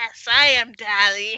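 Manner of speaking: very loud, hissing owl voice. Voicing an unseen speaker the characters hear, in a hissing owl voice. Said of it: "hear this hissing owl voice go".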